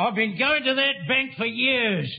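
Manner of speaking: plain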